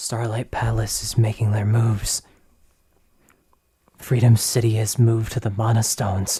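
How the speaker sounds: ominous, prophetic-sounding muttering, half to herself. Voicing a stranger the party meets, speaking to them, prophetic muttering. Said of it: "you can see that she is an elven woman with a large amber eye on the center of her forehead. / you can see that she is an elven woman with a large amber eye on the center of her forehead. / you can se".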